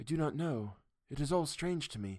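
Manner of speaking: far-off, dreamy, slightly high voice. Answering the professor's question, dreamily. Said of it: "The answer came dreamily".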